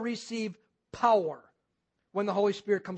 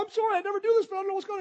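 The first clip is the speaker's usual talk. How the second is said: very high, tearful, rushed blubbering sob, words tumbling out; 11 semitones higher than usual. Acting out a lady approached in the grocery store, imitating her blubbering and crying. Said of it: "that lady can blubber and cry".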